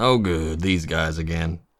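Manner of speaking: low muttering under the breath to oneself. A player's character walks past a group that ignores them, muttered under breath. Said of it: "I'll just mutter under my breath".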